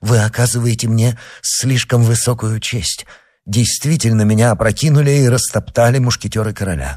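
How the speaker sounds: ordinary delivery, nothing marked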